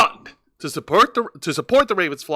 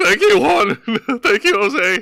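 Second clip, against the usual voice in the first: high, jittery, nervous voice that cracks; 6 semitones higher than usual. Teasing a co-host whose voice cracked, imitating Juan's nervous cracking voice. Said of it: "Juan's nervous. Like".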